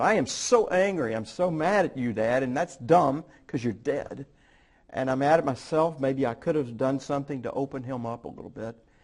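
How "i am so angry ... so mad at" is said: plain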